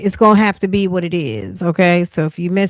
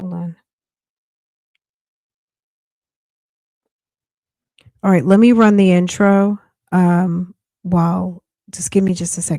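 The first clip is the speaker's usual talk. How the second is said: voice giving out, sounding strange. Speaker asking the audience to wait before running the intro, losing their voice. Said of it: "You hear how my voice sounds?".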